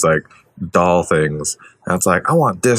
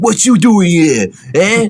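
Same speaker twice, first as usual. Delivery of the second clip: bad, over-the-top New Jersey accent, very high, loud; 13 semitones higher, 5 dB louder than usual. Describing a nineties movie's bad guy, doing Jackie Earle Haley's horrible New York Jersey accent. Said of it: "horrible like New York Jersey accent thing".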